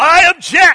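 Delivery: bold, high-pitched, loud delivery.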